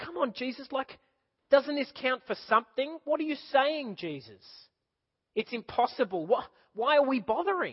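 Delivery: put-on exasperated, bewildered tone. Acting out Peter's words to Jesus, in mock frustrated confusion. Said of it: "the confusion and frustration in his voice".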